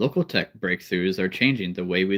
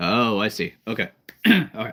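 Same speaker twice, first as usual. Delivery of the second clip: ordinary talk, nothing marked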